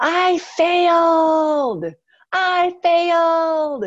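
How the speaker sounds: celebratory yell, high, loud and slow.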